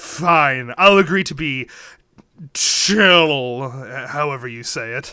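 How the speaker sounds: grudging, reluctant cat voice, dragged out very slow. Voicing a cat that rolls its eyes and agrees: eye-rolling cat voice. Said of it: "you see the cat roll its eyes, and it's like".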